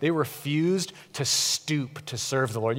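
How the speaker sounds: put-on, openly sarcastic tone. Quoting a line from scripture to listeners, quoting sarcastically. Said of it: "You hear his sarcasm in that?".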